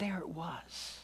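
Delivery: slow, soft whisper.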